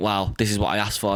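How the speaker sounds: ordinary delivery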